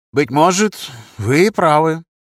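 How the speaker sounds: reluctant, grudging, conceding against inner resistance. A man gives in during a debate on training surgeons, reluctantly agreeing. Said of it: "Как бы нехотя, преодолевая внутреннее сопротивление, согласился Юдин".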